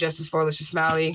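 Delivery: ordinary talk, nothing marked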